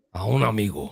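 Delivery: mock Spanish-language broadcaster voice. Repeating the podcast request in Spanish, in a Telemundo voice. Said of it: "En my Telemundo voice".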